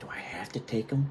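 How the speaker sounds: hushed, quiet whisper. Retelling what the staff sergeant whispered after signing paperwork: retelling a whispered question. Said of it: "he looks at me and he whispers".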